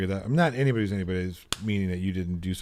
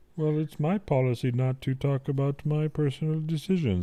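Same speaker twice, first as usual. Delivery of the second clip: put-on puppet-like voice, higher pitch; 7 semitones higher than usual. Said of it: "get more Kermit in there".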